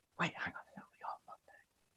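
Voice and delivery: soft, unvoiced whisper.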